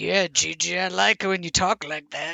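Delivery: very slow, menacing, drawn-out drawl. Imitating Ron to the others, as he would have said it. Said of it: "He's like this".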